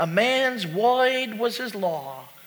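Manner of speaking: put-on Brooklyn accent, put on. Quoting what the speaker's dad said when the speaker was a boy, imitating dad's brooklyn accent. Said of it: "he'd say it in his Brooklyn accent".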